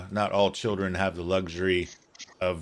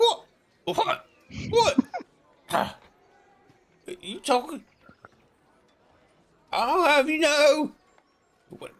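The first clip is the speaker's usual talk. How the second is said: put-on young dwarf boy voice, higher. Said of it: "I get boy voice".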